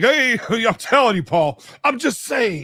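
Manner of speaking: very high, hyped-up, over-the-top perky voice. Saying he needn't perk up for the whole hour, he demonstrates: over-the-top energetic voice. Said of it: "the whole time I talk like this".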